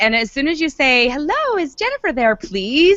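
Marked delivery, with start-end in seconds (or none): 1.1-3.0 really sweet, polite, courteous, pitched-up voice. Showing how to open a phone call asking for Jennifer, in a sweet, polite voice. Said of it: "in a really sweet, polite voice".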